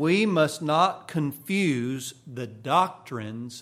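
doctrines stressed slow and loud, preacher-like. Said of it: "I want to emphasize the word doctrines".

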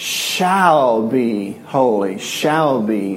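stressed, slowly drawn-out shall be.

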